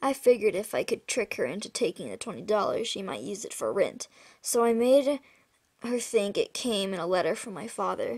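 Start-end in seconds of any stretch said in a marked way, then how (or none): none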